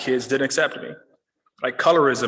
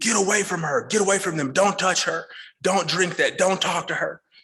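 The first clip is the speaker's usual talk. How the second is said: high-pitched, furious voice; 5 semitones higher than usual. Retelling a neighbor's mother yelling at the children: imitating a screaming furious woman. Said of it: "she is screaming, fuming".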